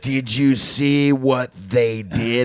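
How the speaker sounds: very slow, indignant, angry tone. Imitating a roommate who walks out to the couch: imitating Tony, angry. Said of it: "He already hates something".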